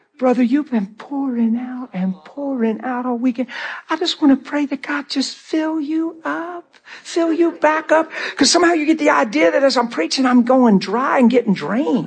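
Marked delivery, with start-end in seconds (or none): 0.2-8.1 put-on sugary, sweet, sincere little old lady's voice. A preacher imitates the sweet ladies who come up to him, imitating a sweet little voice. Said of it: "You get your little sweet voice on".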